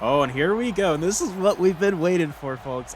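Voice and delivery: thrilled, eager tone. Starting a first weather game in Madden for viewers, in an excited voice. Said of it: "a lot of excitement in my voice there".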